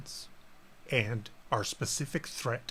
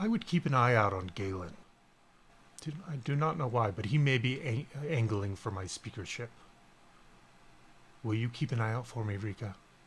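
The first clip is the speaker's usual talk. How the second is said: hushed whisper, very quiet. Voicing a character who warns a player about galen: whispering very quietly. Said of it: "And he says this very quietly".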